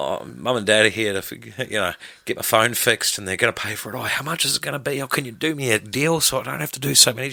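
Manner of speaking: mock timid, worried, nervous and scared voice. Describing customers whose mum and dad pay for the phone fix; acting out a scared customer. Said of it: "they're like shit scared, and they go".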